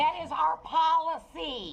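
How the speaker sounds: angry words, very slowly and deliberately spaced. Answering a complaint at a front desk: yelling. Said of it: "'Cause you're yelling at me".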